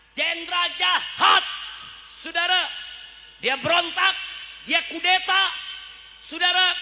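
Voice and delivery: loud shouting. A speaker addresses listeners, shouting.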